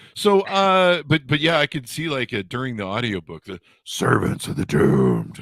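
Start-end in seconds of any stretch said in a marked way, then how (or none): 3.4-5.4 mock ominous echoing voice of doom, lower. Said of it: "an echoing voice of doom".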